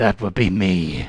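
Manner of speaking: rough, deep, gruff voice. A storyteller voices someone off to the east answering visitors, in a gruff voice. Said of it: "a gruff voice from somewhat off to the east says".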